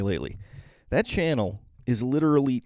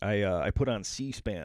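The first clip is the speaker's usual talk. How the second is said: ordinary talk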